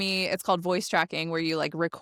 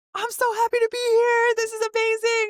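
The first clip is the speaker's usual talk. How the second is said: very high, exaggerated, over-animated radio voice; 5 dB louder than usual. A radio host mimics how they thought radio had to sound: over-animated radio voice. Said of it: "I thought you had to have this like radio voice".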